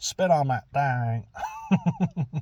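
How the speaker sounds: very slow, swooping, thick Alabama drawl. Retelling a viral clip's answer on pleasing your man: imitating Hawk Tuah girl's thick Alabama accent. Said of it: "Real deep south".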